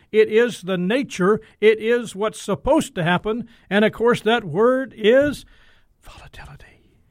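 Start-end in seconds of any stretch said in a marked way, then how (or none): 6.0-6.6 volatility breathed in a hushed whisper. Naming the dreaded word volatility, the speaker drops to a whispered volatility. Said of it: "I had to whisper it".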